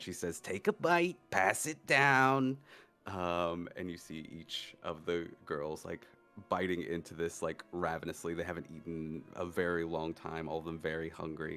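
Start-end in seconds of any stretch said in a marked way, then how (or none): 0.4-2.6 high, raised, motherly character voice. Narrating a story where the mother speaks to her daughters, in the mother voice. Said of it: "I gotta get the mother voice again".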